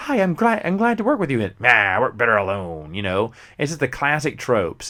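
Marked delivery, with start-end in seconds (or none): 0.0-1.4 chipper, peppy, very high-pitched cheerful upbeat voice. Listing classic partner tropes, the speaker voices the new partner: imitating a peppy, upbeat person. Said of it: "peppy, upbeat person".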